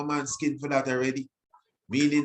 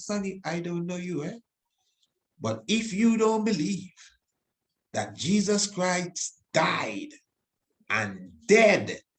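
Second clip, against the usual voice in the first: put-on raw Antiguan Caribbean accent; 4 semitones higher than usual. Retell a woman calling the program and addressing Sonny, imitating a raw Antiguan accent. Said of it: "raw Antiguan".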